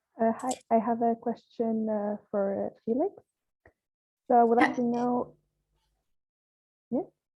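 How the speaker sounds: sounding muffled. Meeting participant asking a question for Felix: sounding muffled. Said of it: "you sound a bit muffled".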